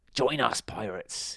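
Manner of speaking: hissed, hissing pirate voice. Reading a story aloud, as one character speaks to a sailor, hissed. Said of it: "he hissed".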